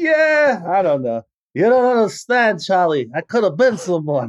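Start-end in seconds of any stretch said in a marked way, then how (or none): 1.5-4.3 put-on classic fifties movie-star voice. Quoting a famous film line after the others' laughter: Brando impression. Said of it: "now do your impression of Jake LaMotta doing Brando".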